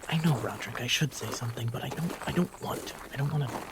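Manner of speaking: hushed whisper. Voicing a character who talks to his little rat skull, whispering.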